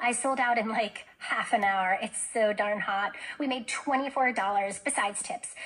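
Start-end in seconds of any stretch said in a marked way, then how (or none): none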